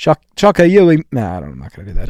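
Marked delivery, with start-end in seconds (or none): 0.0-1.0 rough attempt at Australian accent, pitched up. Guessing the meaning of australian slang, reading the phrase aloud: attempted australian accent. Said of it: "I'm gonna try to do it in an accent".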